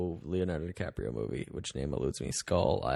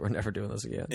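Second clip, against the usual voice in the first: ordinary delivery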